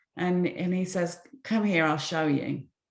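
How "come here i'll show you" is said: ordinary talk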